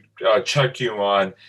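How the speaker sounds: ordinary talk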